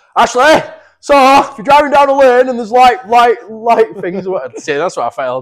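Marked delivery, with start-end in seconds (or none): 0.2-4.3 shrill, high-pitched, very loud yelling. Retelling what someone shouted at him: imitating someone shouting. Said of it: "was shouting at me".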